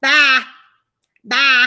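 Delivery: put-on very loud little-kid voice. Imitating a one-year-old grandson who only says one word. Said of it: "So I say it just like him".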